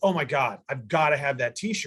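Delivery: ordinary talk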